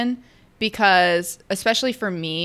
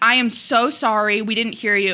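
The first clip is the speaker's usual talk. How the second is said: mock flustered voice, much slower; 4 semitones higher than usual. Retelling how two men apologized after not hearing her, imitating a flustered apology. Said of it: "And they're like flustered".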